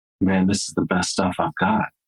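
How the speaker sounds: acted very calm delivery with no attitude. Retelling how a job seeker answered after a tear fell, retelling calm words. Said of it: "very calmly said".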